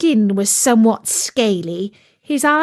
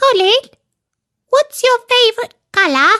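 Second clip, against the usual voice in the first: very high, tiny, squeaky little voice; 13 semitones higher, 4 dB louder than usual. Reading a story, voicing a tiny tadpole asking a question: squeaky voice. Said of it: "He heard a squeaky voice saying".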